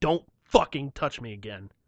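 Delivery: menacing, deadly threatening tone. Retelling a warning to someone who touched the speaker: retelling a menacing warning. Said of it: "the look of death in my eyes".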